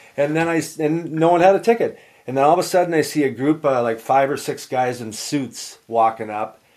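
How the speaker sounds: ordinary delivery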